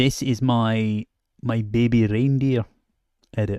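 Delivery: bad, put-on Scottish accent. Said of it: "my bad impression of a, uh, Scottish person".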